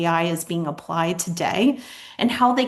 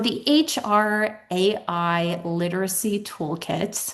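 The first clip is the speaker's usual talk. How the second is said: very slow, deliberate, careful phrasing, word by word. Speaker naming the toolkit's long title, saying it very slowly. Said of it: "I have to say that very slowly".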